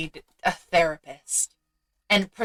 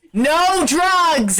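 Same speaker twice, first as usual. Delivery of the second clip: called out as if across a room; 9 semitones higher, 7 dB louder than usual. Voicing Val calling over from across the room: calling over from across the room. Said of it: "as Val calls over to you".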